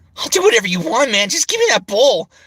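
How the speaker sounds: very high, loud, swooping, sing-song character voice. Redoing a past cartoon role's line: his Link voice. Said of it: "voicing Link was really cool".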